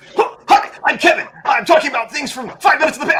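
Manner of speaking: mock dubbed voice, high-pitched and loud.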